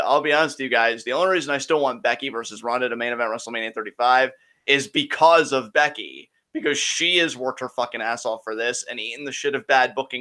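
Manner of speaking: ordinary talk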